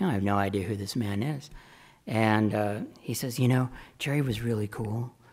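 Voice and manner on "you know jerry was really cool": imitated aging hippie voice. Retelling a phone call from a stranger, doing John Parker's old hippie voice. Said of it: "his old hippie voice".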